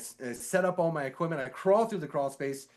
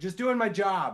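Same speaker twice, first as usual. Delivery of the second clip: put-on light called-out voice, pitched higher; 5 semitones higher than usual. Retelling answering a neighbor through a closed car window: retelling own yell. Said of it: "is what I yelled out the closed window".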